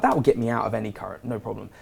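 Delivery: normal talking voice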